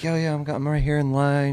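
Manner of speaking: casual, offhand, chatty talk. Imitating someone talking on a call in line: imitating someone on a call in line. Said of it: "you'd be like".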